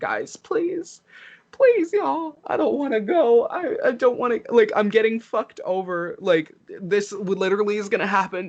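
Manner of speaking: high, fake-tearful, weepy pleading voice. Retelling pleading with the other players in a game: imitating own fake-crying plea. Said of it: "I tried to get the heartstrings of being like".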